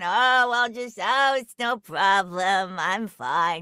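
sort-of New York accent, slow. Recalling the Skylanders worms getting stepped on, in a sort of New York accent. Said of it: "We used a sort of New York accent for the the worms that were getting stepped on".

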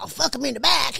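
loud, creaky, rough-edged put-on voice. Retelling how a man named Rusty might have talked: imitating Rusty. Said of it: "I like his impression".

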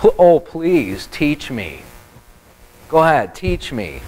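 mocking, dripping with sarcasm. Acting out Job answering his friends: sarcastic voice as Job. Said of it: "Sarcastic, sarcastic in his response".

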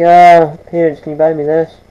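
ordinary talk

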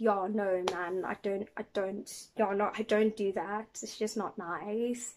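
soft, put-on South African accent. Showing how they would sound if they were South African, South African accent. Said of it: "if I was South African, I'd probably sound like".

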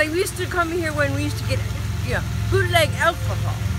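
put-on Italian-accented grandma voice.

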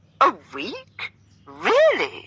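theatrical, overdone astonishment, high and swooping. Mr Tilney, in an overly polite voice, answers Catherine; exaggerated surprise. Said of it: "with excessive surprise".

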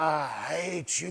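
low, quiet, strange demonic voice. A pastor recounts a woman whose eyes went dark, imitating the voice from her. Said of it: "This voice comes out of her".

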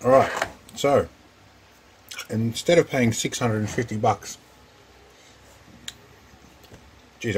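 speaking with food in mouth. Speaker opening a package while eating, talking with mouth full. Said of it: "I've got a mouthful of stuff here".

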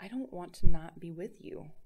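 whispered, breaking, cracking voice. A woman speaks to the man touching her shoulders, whispered, voice cracking. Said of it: "she whispered, her voice cracking".

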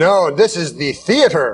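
play-acted snooty, haughty, stuck-up know-it-all tone. Retelling the theater guy's answer when asked about the sports ticker, mimicking a snooty man. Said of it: "he's all like snooty".

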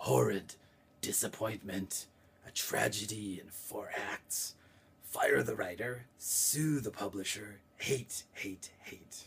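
slow, throaty dragon voice, pulled back in throat. Voicing the dragon's line while telling a story, throaty dragon voice. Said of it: "I do it in the voice of the dragon, which is back in the throat".

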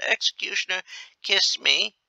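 high-pitched, bedraggled man's croak. A bedraggled man steps forward to the executioner, croaking. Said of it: "He croaks".

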